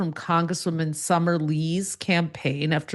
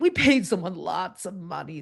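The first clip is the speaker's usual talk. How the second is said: imitated, bizarre, exaggerated vocal fry. Recounting a campaign's answer to a reporter, imitating Dan Moraff's vocal fry. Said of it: "has this bizarre vocal fry".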